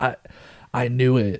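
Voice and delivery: put-on whisper. Retelling what a boy says to the babysitter: imitating a whisper. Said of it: "whispers to the babysitter".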